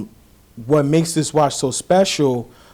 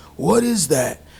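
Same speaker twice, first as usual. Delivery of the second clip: put-on old, raspy voice, slower pace; 4 semitones higher than usual. Retelling how Jerry pointed out the watch and asked about it, Jerry's old raspy voice. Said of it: "In that like old raspy voice".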